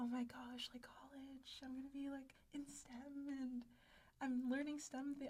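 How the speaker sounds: mock naive, eager, high excited gushing voice. Retelling own first days at college, imitating own excited past self. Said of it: "I was so excited".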